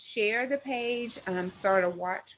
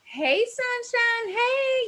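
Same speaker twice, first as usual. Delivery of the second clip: put-on little country accent, higher and louder; 13 semitones higher, 6 dB louder than usual. Opening a live session by greeting viewers: little country voice. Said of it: "my little country voice".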